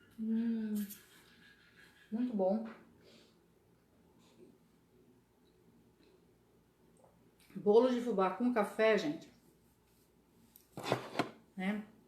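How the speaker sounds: speaking while chewing, mouth full. Tasting cornmeal cake, the speaker keeps talking to the audience; talking with mouth full. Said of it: "Eu vou continuar falando de boca cheia".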